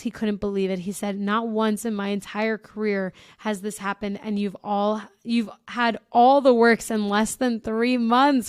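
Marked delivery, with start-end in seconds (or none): none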